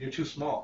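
deadpan, grave, dead serious, breathy whisper. Retelling a scene from Unhung Hero as she turns serious: imitating a dead serious tone. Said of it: "she gets dead serious".

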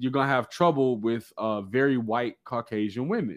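ordinary talk, nothing marked

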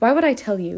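loud, contemptuous, scornful sneer. A man refuses to answer the narrator's question, sneering. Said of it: "He sneered".

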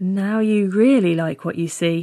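ordinary talk

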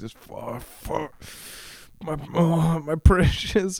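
slow evil creature voice with a drawn-out my. Joking about how men act in bed, a man does a bad Gollum voice. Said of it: "I can't do a golem voice".

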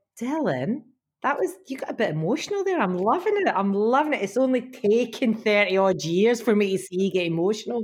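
ordinary talk

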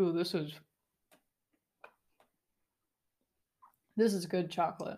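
talking with mouth full. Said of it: "As I'm talking with my mouth full".

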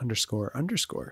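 each "underscore" punched hard, heavy stress. Imitating how the other speaker said the handle: emphasis on "underscore underscore". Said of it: "you're like".

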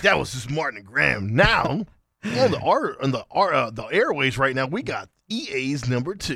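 radio countdown host style announcer voice. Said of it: "you sound like Casey Kasem".

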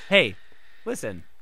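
fairy character voice, pitched low. Speaker interrupts the conversation with a joke impression: Navi the Fairy impression. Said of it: "That was my Navi the Fairy impression".

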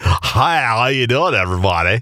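slow, put-on radio announcer voice. Imitating a man who starred in radio, in a radio announcer voice. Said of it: "he has that radio voice".

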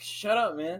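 ordinary delivery

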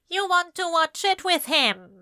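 sneering voice. Reading a story aloud, a stranger warning about someone: sneering voice. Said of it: "the sneer in his voice".

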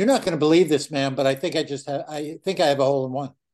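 ordinary delivery

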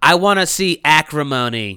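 loud, slow, rude, drawn-out tone. Retelling a rude lady at the ticket booth: imitating a rude loud woman. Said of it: "you don't have to say it like that".

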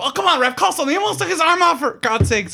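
play-acted, shrill, very high, loud yelling. Quoting the coach yelling at the referee, imitating yelling. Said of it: "he's yelling at the ref".

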